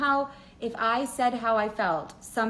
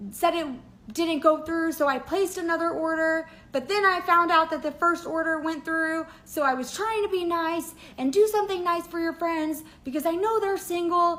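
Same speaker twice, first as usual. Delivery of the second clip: put-on angry shouted rant, pitched up; 7 semitones higher than usual. Acting out a man yelling at her about the flower order, imitating yelling. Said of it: "he's yelling at me".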